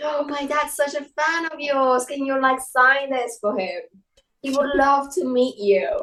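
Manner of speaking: put-on British accent. Retelling what they said to someone in a dream, British accent. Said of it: "I was speaking actually with a British accent in my dream".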